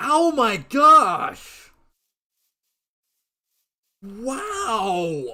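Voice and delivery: very loud cry with voice cracking and breaking. Reacting while playing a game, voice cracking. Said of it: "I just voice cracked".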